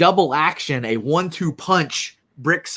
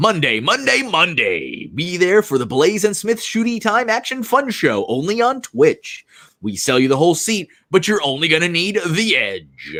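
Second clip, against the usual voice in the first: put-on commercial promo announcer voice; 4 semitones higher than usual. Streamer does a show commercial at a viewer's request, in an announcer voice. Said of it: "comment from Brick, Brick Blaze that says announcer voice".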